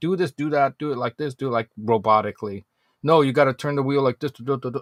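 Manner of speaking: bossy, authoritative, commanding teacher voice. Acting out a driving teacher giving orders: imitating a bossy authoritative instructor. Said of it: "like some authoritative figure saying".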